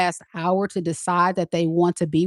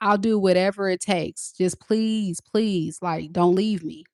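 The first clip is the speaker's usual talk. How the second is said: imitated begging, pleading tone. Acting out a partner's plea not to be left: imitating someone begging. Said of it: "getting a begging energy".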